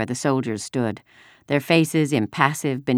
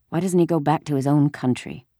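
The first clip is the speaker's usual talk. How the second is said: ordinary delivery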